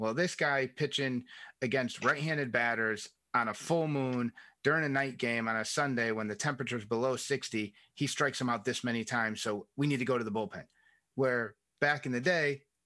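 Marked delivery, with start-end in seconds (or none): none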